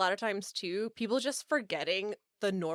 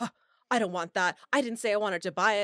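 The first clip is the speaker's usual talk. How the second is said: imitated freaked-out man voice; 5 dB louder than usual. Speaker retells a man who asked an art price, then refused the note; imitating him freaking out. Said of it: "freaked out at me".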